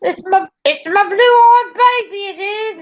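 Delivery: high-pitched failed Australian accent slipping into British. Chatting with others, the speaker tries a bad fake Australian accent. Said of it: "It doesn't sound Australian. It barely sounds British".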